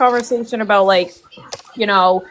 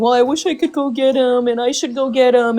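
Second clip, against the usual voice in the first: put-on tearful crying through the words; 3 semitones higher than usual. Retelling what she said about going to get him: imitating someone crying. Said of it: "crying and saying".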